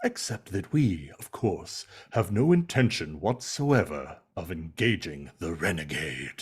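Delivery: deep, try-hard villain voice, laid on thick. Acting out how a comic character might sound: imagined try-hard Megatron-like voice. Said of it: "I pictured his voice being like".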